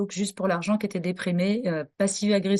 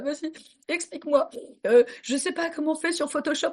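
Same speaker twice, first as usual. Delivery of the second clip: high-pitched, weepy, tearful, crying through words; 8 semitones higher than usual. Retelling her first computer lesson during her separation, imitating her own crying. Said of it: "je suis en pleine séparation et que je pleure".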